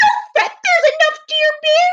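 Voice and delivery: squeaked high and a bit loud. Narrator reading a story aloud, Mouse answering Bear, in a squeaky Mouse voice. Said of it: "Mouse squeaks".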